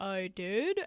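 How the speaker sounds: put-on pet reindeer character voice. Retelling a movie scene where Kristoff speaks for Sven: Kristoff's Sven voice. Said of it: "does his voice for Sven".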